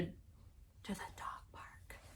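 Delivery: whispered, very slow and quiet. Explaining where mud stains in the car come from, whispering. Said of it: "I'm gonna whisper that".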